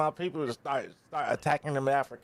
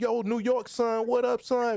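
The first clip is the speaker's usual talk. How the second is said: put-on Jamaican accent, slow and high; 8 semitones higher than usual. Describing how Jamaicans talk in New York: imitating Jamaicans talking. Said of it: "when you hear Jamaicans".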